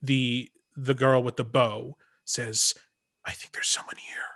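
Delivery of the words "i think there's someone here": very quiet, breathy stage whisper, barely voiced. Speaker voices Reina, the girl with the bow, in Reina's stage whisper. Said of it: "you hear in a stage whisper".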